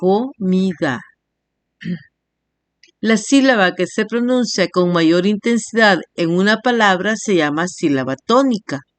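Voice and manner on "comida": slow, syllable-by-syllable delivery.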